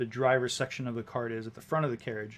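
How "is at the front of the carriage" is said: ordinary talk, nothing marked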